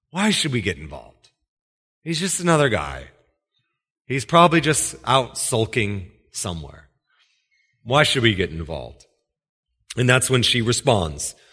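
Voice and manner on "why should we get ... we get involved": heavy, dripping sarcasm in swooping sing-song. Acting out the community asking why they should get involved: imitating a sarcastic tone. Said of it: "it's dripping with sarcasm".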